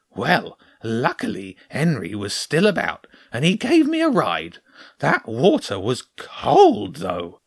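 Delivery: put-on high, swooping hedgehog voice. Narrator voices the hedgehog answering James's question, in a hedgehog character voice.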